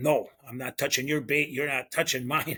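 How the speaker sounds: put-on, serious-sounding tone. Retelling a fishing partner's refusal to share gear: imitating a serious tone. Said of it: "he was pretty serious".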